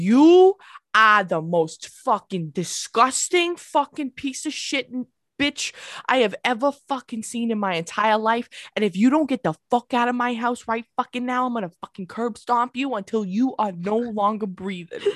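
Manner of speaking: mock enraged, furious ranting tirade. Describing how their dad talks when really mad: imitating a furious rant. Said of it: "But when he's really mad, he's like".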